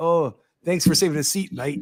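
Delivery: put-on, attempted Canadian accent. Acting out thanking someone for saving a seat, in a put-on canadian accent. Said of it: "I don't even know if that's Canadian".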